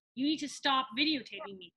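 put-on, confrontational woman's voice. Retelling what a woman in the park told a man filming her, imitating her confrontationally. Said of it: "She is being very confrontational".

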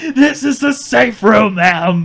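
put-on very slow, loud, drawn-out, freaked-out panicked yell. Describing an Until Dawn scene where an armed man freaks out, retelling a panicked yell. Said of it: "and then he yells".

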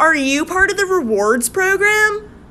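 loud high repeat.

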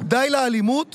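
ordinary delivery

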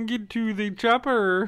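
put-on puppet frog voice. Repeating a requested movie-line impression: Arnold impression sounding like Kermit the Frog. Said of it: "It got real Kermit the Frog for a while there".

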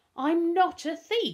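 shrill, high, loud, very slow drawn-out exclamation. Darkus, called a thief by Humphrey and Pickering, answers them, exclaiming. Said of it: "Darkus exclaimed".

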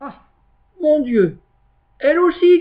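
stunned, astonished cry, very high and loud. Monsieur Seguin, milking the goat, hears she wants to leave: stunned outcry. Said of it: "cria Monsieur Seguin stupéfait".

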